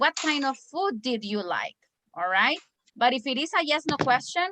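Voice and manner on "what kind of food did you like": pitch dropping at the end on like. Teaching information-question intonation with an example: falling pitch at the end. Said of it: "when you have an information question, the pronunciation or the pitch is falling".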